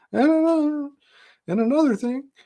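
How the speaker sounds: cracking voice.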